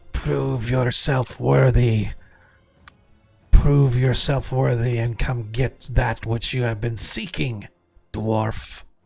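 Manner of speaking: unearthly whispering voice. A game narrator voices a voice speaking in a dwarf's mind, otherworldly whisper. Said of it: "you hear a whispering voice in a otherworldly language".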